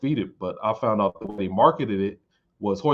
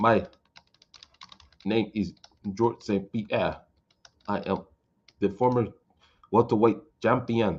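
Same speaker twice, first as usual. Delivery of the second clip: flat, level, monotone robotic machine-like voice. Mimicking how he talks, like typing on a keyboard: robotic Georges St-Pierre voice. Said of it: "talks like an A I system".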